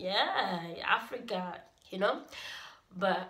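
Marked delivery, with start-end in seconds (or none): 0.0-1.6 mocking, sarcastic tone. Retelling a reply to a stupid question about Africa: retelling a sarcastic answer. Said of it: "answer a stupid question with a sarcastic answer".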